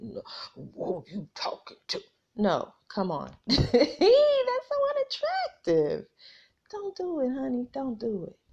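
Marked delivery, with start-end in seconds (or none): 0.0-2.0 whispered, deep, breathy tough-guy bravado. Speaker warns listeners not to match a man's level, imitating a deep bravado voice. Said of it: "making your voice all deep and bravadoed".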